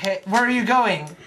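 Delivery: normal talking voice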